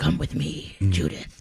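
slow, breathy, whispered superhero voice. Mocking characters on a show who all talk like this: Batman voice. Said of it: "they all have Batman voice".

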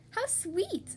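high-pitched cry full of delight. Narrating a story, a girl finds a little house in the wood: crying out in delight. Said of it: "she cried, clapping her hands in delight".

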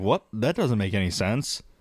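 ordinary talk

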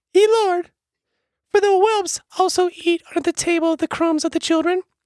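put-on woman's voice, loud, pitched way up. Reading a scripture passage aloud, the reader voices the woman's reply in a put-on female voice. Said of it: "I need a female voice for this".

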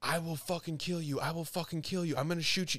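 put-on screaming in a woman's voice. Retelling a video where a man grabs a police officer; imitating a woman screaming. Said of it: "she's literally screaming".

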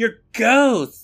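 shrill, very high, loud shout. Retelling a game scene where Hannah shouts at a woman: imitating someone shouting. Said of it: "She shouts".

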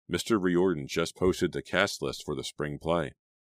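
ordinary delivery

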